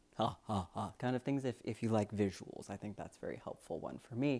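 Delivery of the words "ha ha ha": voice dropped way down, deep laugh. Giving a visual example of lowering to change the sound, Jabba the Hutt laugh. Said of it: "Think of uh, Jabba the Hutt".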